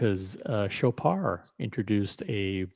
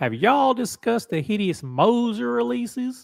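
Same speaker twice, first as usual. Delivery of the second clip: very high, loud Southern American accent; 13 semitones higher, 6 dB louder than usual. Rereading a question aloud to the group, now in a southern accent. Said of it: "can we say that with a southern accent?".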